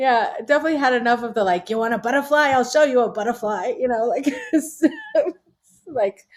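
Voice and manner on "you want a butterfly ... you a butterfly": in-your-face, tough-talking Brooklyn attitude. Speaker imitates a made-up guy, doing mock spit-in-your-face Brooklyn attitude. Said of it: "spit in your face, Brooklyn attitude".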